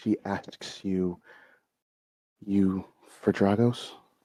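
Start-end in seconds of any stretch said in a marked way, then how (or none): 2.5-3.9 deep, very low, vampire-like voice. Narrating a scene, voice a woman asking whom the party seeks: low voice. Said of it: "in a very like low voice".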